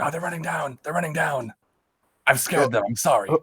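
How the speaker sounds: hushed voice. A character relays what they see to the people on the ground, relaying quietly. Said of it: "relay that sort of quietly".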